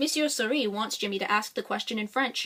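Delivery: ordinary delivery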